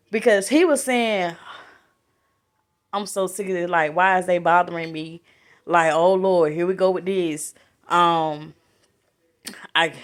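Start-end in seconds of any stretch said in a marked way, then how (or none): 3.0-7.6 put-on tone dripping with thick, heavy sarcasm. Retelling what a crowned figure said about people pleading to him: imitating a sarcastic tone. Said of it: "it was so much sarcasm in it".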